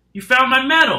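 very loud, high, shrill cry of amazement. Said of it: "Solway exclaims in amazement".

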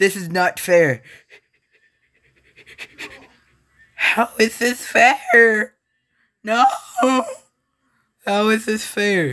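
very high, cracking, panicked voice breaking. Gamer spawns right next to a raptor and protests: voice cracking. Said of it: "Don't mind the voice cracks".

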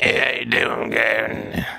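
low, slow, rasping, creaky undead ghoul drawl. Making a ghoul appear to talk, greeting gavin in a ghoul voice. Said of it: "That's how all the ghouls sound".

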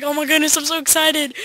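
usual speaking voice

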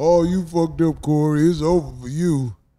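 mocking imitation of a voice. Retelling what the haters said after a bad show: imitating the haters. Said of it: "a whole bunch of Buster motherfuckers telling me how".

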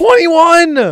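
high-pitched, loud, shocked outburst.

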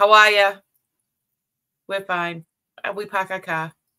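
put-on Boston accent. Speaker says he ships from Boston, then greets listeners in a thick Boston accent. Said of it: "that's why I speak like this".

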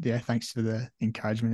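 ordinary talk, nothing marked

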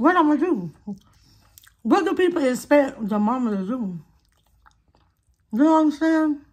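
talking with food in mouth. Talking to viewers about their adult daughters, the speaker talks with food in their mouth. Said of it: "talking with food in my mouth".

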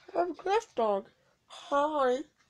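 slow, drawn-out put-on mascot voice. Introducing a mascot on camera, speaking as it: Cliff Dog voice. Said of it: "And I'm the voice of Cliff Dog".

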